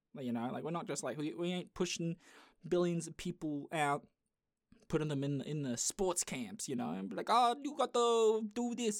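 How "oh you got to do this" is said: high, slow, over-the-top exaggerated Chinese accent. Voicing someone pushing people at Chinese sports camps, in a put-on Chinese accent. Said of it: "I'm Chinese, I can make that voice".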